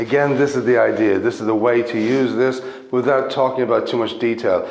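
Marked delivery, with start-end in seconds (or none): none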